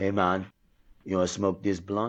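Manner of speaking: put-on very thick Haitian Creole sounding accent. Retelling how a man who didn't know your past offered a smoke, in a very Haitian Creole sounding voice. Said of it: "In like a very Haitian Creole sounding voice".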